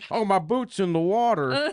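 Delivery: high, put-on cowboy accent, done as a character. Arguing with friends, one imitates how a man sounds in a cowboy accent. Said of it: "his fucking cowboy".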